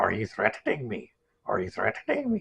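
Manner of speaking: cartoon voice swooping up, then down. Explaining cartoon voices, the speaker shows how Beavis goes up and down. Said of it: "Beavis goes up like... It comes down. So up and down".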